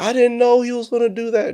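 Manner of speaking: put-on shrill, very high, very loud crying wail. Retelling what a woman said after he took office: imitating someone crying. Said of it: "she's up there crying".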